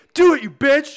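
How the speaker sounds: shrill, very high, very loud psyched-up yell. Retelling how a skater pumped himself up before a jump: imitating someone psyching himself up. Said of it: "self-talk, he's like".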